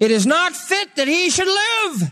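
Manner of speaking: very high, slow, crying crowd voice.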